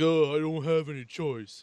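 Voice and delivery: slow, measured, drawn-out action-movie tough guy voice. Quoting a movie character, doing a Vin Diesel impression. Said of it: "That's my Vin Diesel impression".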